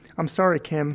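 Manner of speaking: ordinary delivery, nothing marked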